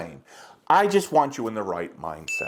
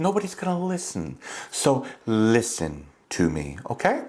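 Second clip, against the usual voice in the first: soft, gentle, easy voice; 3 semitones lower than usual. Showing the viewers how dull a plain talk would sound: talking nice and softly. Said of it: "Talking nice and softly".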